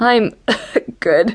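chuckling between coughs. After choking on a mouthful of beer, chuckling between coughs. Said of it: "he chuckled between coughs".

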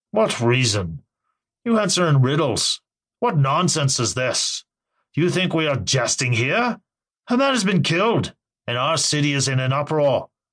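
challenging, accusatory tone with swooping pitch. The mayor answers the Wizard before his council, accusing. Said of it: "the mayor accused".

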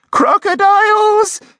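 piercing, shrill, very high, loud shriek. Narrator reads Mrs. Odd's cry as she leaps onto a chair, shrieking. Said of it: "Shrieked Mrs. Odd".

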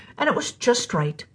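ordinary delivery

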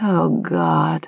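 mumbled, muttered under the breath. Narrator voicing Grace as she spots someone past his shoulder, muttered. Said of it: "she muttered".

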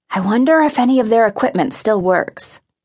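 ordinary delivery

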